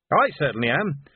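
ordinary delivery, nothing marked

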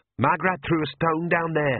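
spoken in a hiss, hissing. Beside a deep drop, she speaks to Nanny Ogg: hissed. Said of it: "she hissed".

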